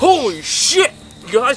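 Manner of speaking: high-pitched, startled, shocked yelp.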